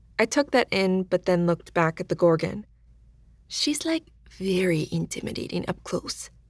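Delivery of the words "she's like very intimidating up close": soft murmur close to the ear, quieter. A narrator reads Joe's aside into the narrator's ear: murmured close to the ear. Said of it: "murmured in my ear".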